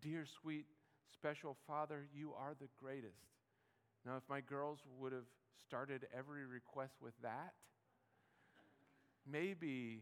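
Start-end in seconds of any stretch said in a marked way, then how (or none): none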